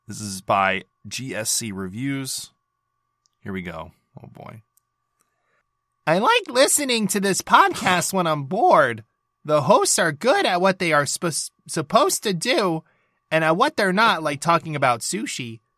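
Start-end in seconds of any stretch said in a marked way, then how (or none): 6.0-15.5 high, pitched-up, put-on character voice. Podcast host reading a listener review aloud by request, Paimon voice. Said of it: "I do have to read this in Paimon's voice".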